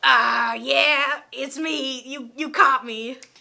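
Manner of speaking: loud, each word dragged out. Retelling a celebrity admitting who he is to a manager: Mister T impression. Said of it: "Was that a good Mister T?".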